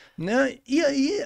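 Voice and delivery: ordinary talk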